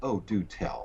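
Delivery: heavily sarcastic, laid on thick. Retelling the ophthalmologist's reply to his claim: imitating a sarcastic reply. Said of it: "with a certain level of sarcasm".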